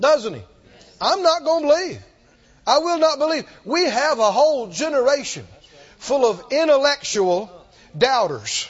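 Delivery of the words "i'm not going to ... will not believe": mock boastful tone, proud, stubborn and insistent. Retelling a disciple's refusal to believe, imitating Thomas's proud voice. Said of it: "He actually has some pride about how unbelieving he is".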